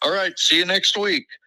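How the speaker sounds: high, called-out yell. Retelling a crowded diner visit as the waiter calls out: imitating a waiter yelling. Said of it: "he yells".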